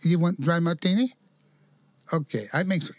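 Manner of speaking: put-on Filipino accent, stand-up comic style. Telling a story, voicing a Filipino lady in a put-on Filipino accent. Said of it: "sound like Joe Coy".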